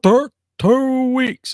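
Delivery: high, loud, glitching, repeating malfunctioning machine voice. Retelling how a costumed figure answered about the stay on Mars, malfunctioning stuttering voice. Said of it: "it malfunctioned and was like".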